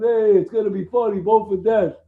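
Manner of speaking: put-on Brooklyn accent. Retelling what a comic book shop owner said: imitating a brooklyn accent. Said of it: "hilarious Brooklyn, almost like Sopranos character".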